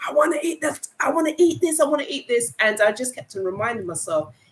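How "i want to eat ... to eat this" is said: put-on high scream, repeated over and over. Retelling a craving for onion rings while off them: retelling a scream. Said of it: "I was screaming".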